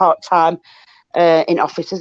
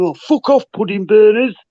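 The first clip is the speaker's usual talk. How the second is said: put-on jeering shouting, crowd style; 4 semitones higher, 3 dB louder than usual. Quoting what they were shouting last night, imitating people shouting. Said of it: "that's what they were shouting".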